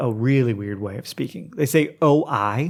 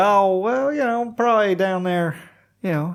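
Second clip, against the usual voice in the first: Okie accent spoken at a raised pitch; 9 semitones higher than usual. Asked to show it, the speaker demonstrates how they would talk in an Okie accent. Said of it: "I can talk like an Okie".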